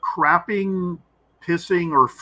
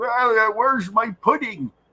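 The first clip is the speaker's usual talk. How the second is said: put-on doddering, shuffling old-man voice, higher pitch; 8 semitones higher than usual. Imitating an eighty-year-old husband shuffling around the house: imitating a shuffling old man. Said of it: "he's shuffling around like Joe Biden, just going".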